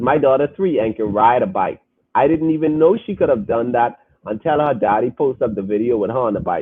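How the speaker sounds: ordinary talk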